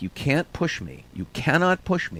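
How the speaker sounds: firm, insistent, repeated yelling. Retelling being crushed against store pegs by a crowd: imitating himself yelling. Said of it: "I ended up yelling at these people".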